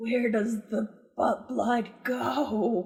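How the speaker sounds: stage whisper, the word "go" drawn out. A game player's character leans in toward him to ask a question: stage whisper. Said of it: "like whispers in like kind of like a stage whisper".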